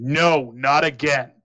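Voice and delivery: booming, loud shouted cry. Narrating the captain's cry at the end of the siren's turn: loud voice. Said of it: "you hear this loud voice say".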